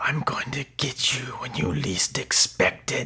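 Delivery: slow, threatening fake voice. Retelling how someone at school tried to scare him: Freddy Krueger voice. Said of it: "I'm trying to do a Freddy Krueger voice".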